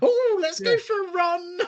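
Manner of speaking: eager, very high and very slow excited voice. Imitating a friend's excitement during the evening: excited impression of Cliff. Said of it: "that's my best impression of you, Cliff".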